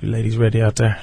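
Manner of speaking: deep late-night voice. Answering a request to talk to the ladies: deep late-night voice. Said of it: "in your deep Arian Foster voice".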